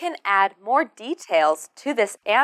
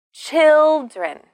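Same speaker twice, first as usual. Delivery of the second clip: put-on children with first syllable CHIL- stressed; 6 semitones higher, 6 dB louder than usual. Teaching the plural of child: stress on first syllable of children. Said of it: "we need to stress the first syllable. Listen".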